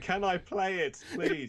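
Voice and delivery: put-on meek, polite pleading. Contrasting how you asked to play with Nick's screaming, acting out a polite plea. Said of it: "I'm more like saying".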